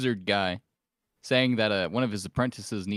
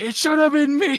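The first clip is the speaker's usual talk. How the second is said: shrill, very high, loud anguished screaming; 9 dB louder than usual. A player voices Joe, who falls to the ground: screaming. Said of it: "falls to the ground and starts screaming".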